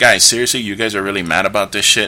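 plain

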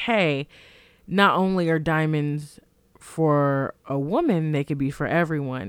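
ordinary talk, nothing marked

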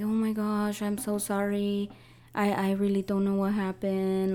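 mock tearful crying voice. Retelling how an ex apologized after pushing: imitating a crying apology. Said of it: "he was even crying about it".

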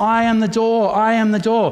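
loud, calling shout. Picturing a smoke-filled room and his voice calling from the fire exit, shouting. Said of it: "you hear my voice shouting in the blackness".

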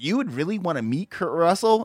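normal talking voice

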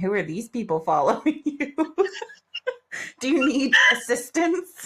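put-on voice of a little old lady. Speaker imagining who would react to followers where she lives, little old lady voice. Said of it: "some little old lady going".

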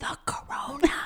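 put-on childlike mouthing. Retelling how a five-year-old niece asked her aunt: imitating a child mouthing it. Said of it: "she mouths it".

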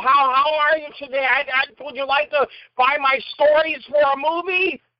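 very high, silly put-on voice. Retelling talking in character while filming a comic wraparound: Jerry Lewis voice. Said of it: "And I was talking like this".

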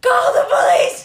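very loud, high-pitched shouting at top of lungs. Retelling grabbing someone's bag in the street: imitating own past yelling. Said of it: "And I started yelling".

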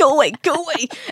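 high, mock dismissive shooing voice.

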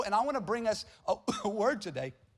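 choked up, words catching in the throat with emotion. Opening a scripture message to listeners before praying together, choked up. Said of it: "I'm choked up".

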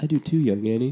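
dropped low voice.

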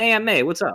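exaggerated New York accent, very high pitch. Imitating how a movie character talks once in a while, exaggerated New York accent. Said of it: "he just kind of talks like this once in a while".

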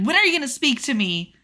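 loud yelling. Recapping an episode's argument, acting out one character yelling at another, retelling a yell. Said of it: "David yells at Snow and is like".

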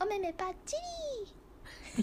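electronic alarm voice. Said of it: "電子ボイスっていうか目覚ましボイス".

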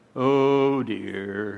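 low, mopey, gloomy voice. Talking about negativity, the speaker asks if you sound like Eeyore: Eeyore impression. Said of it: "You ever sound like Eeyore?".

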